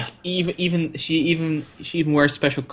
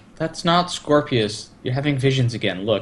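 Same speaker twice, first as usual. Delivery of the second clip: ordinary talk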